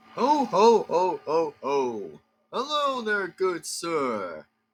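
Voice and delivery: swooping sing-song tune with sir drawn out. Acting out a skit, greeting someone in the house: Santa Claus voice. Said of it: "I am Santa Claus".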